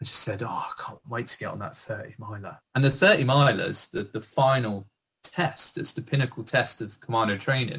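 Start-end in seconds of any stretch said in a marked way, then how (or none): 0.0-2.6 very quiet, hushed whisper. Retelling what they whispered to the guy next to them while standing to attention: whispering. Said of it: "I remember whispering to the guy next to me".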